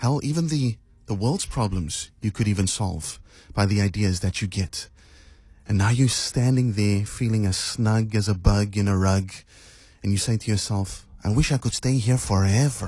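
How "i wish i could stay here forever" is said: put-on Mexican accent. Imagining saying to yourself while feeling snug, Mexican accent. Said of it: "why did I just say that in a Mexican accent?".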